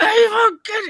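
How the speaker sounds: shrill, very high, loud mean scream. Telling a story, acting out screaming at the barking dog from the back door. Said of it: "I'm screaming it like the mean".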